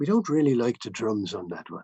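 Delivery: terrible put-on Irish accent. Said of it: "excuse my terrible Irish accent".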